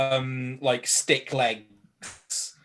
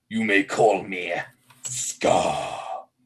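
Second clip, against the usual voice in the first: eerie, very slow, drawn-out, unsettling voice; 5 semitones lower than usual. Voicing a mysterious voice heard from somewhere: unsettling voice. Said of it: "it's an unsettling voice".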